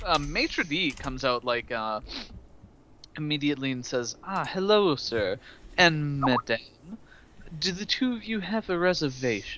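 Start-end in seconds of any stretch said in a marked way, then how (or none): 4.2-9.6 courteous, looking-down-the-nose polite tone. Voicing a high elf maitre d' greeting the guests: polite but snooty high elf maitre d'. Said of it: "is being polite, but is also kind of looking down his nose".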